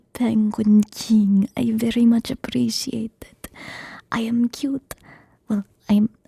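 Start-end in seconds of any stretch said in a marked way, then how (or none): none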